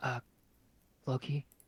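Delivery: acted fairy-like whisper. Voicing Key, who calls Floki during a rest: Key's faint whisper. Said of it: "you hear a faint whisper of Key's voice".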